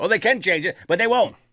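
high, loud, worked-up ranting voice. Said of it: "I sound like Lewis for a second".

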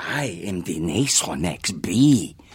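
low, slow bee voice with Spanish accent.

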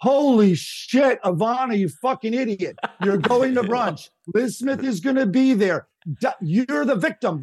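put-on high yell. Retelling a man yelling at Ivana, imitating someone yelling. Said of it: "he's in the middle of like yelling".

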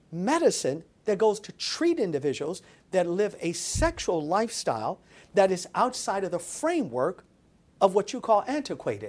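ordinary talk

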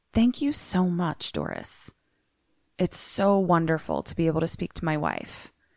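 put-on super chill, easygoing, swooping tone. Telling a story, speaker quotes a man's reply to a woman, retelling, super chill. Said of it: "stays super chill and he says".

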